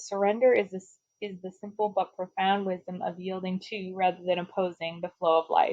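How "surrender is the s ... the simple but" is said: plain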